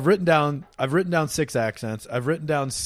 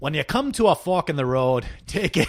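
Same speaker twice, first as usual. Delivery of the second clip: attempted put-on Scottish accent. Trying out an accent while workshopping it with another speaker: attempted Scottish accent. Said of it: "what's my key for Scottish?".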